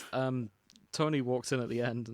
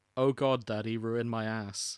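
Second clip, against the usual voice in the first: dry, expressionless, flat, slow deadpan; 2 semitones lower than usual. Imagining a character saying a line in a deadpan tone: imitating a deadpan tone. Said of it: "in that deadpan tone that she uses".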